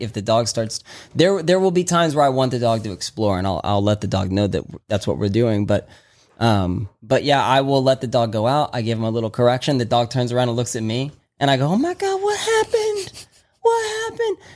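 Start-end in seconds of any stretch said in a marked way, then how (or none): 11.7-14.4 very high, slow pretend surprise. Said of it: "I truly pretend like I don't know".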